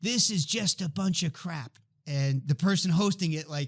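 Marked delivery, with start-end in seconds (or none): 0.0-1.8 mock half-voiced, mild, hostile yell. Retelling how a surgeon at the back of the room interrupted: imitating someone screaming. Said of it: "he just screams out".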